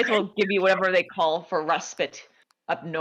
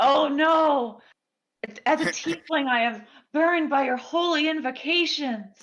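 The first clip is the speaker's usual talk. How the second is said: plainly play-acted, pitched-up fake scream; 7 semitones higher than usual. Zerka reacts to someone saying a blessing, mock screaming. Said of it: "Zerka like mock screams".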